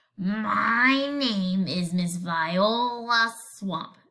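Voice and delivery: low, scratchy, raspy voice, my drawn out. Reading a story aloud, the lady introduces herself to the class, Miss Viola Swamp scratchy voice. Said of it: "the lady said in a scratchy voice".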